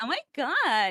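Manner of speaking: put-on valley girl voice. Playing along as another speaker describes silly voices, an annoying valley girl voice. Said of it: "those kind of annoying voices".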